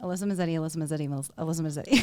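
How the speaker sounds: rapid speech. Repeating own name three times after being asked to say it faster: said fast. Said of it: "Can you say that faster, please? Three times".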